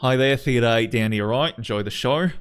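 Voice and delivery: put-on Aussie accent. Speaker greets a theatre audience as a character, in an australian accent. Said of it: "I gotta use my Australian uh my Australian access term there".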